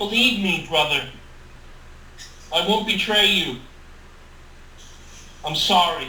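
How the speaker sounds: plain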